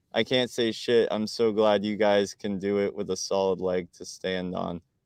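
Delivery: normal talking voice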